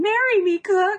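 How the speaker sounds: absurdly overblown, very high, shrill, way over the top. Quoting the line they always wait for, in an over-the-top Aethelon voice. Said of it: "in like this ridiculous over-the-top way".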